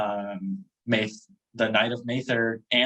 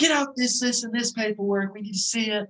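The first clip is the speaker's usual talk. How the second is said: very high-pitched, barked shouting; 11 semitones higher than usual. Retelling what military trainers shouted at the airport: imitating trainers yelling orders. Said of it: "already yelling".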